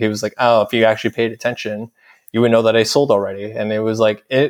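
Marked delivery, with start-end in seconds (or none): none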